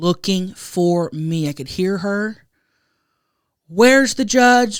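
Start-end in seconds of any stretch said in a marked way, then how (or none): 3.7-4.8 loud, panicky, frantic mom voice. Retelling a parent searching for the judge after a pageant: imitating a mom freaking out. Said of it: "Like, freaking out".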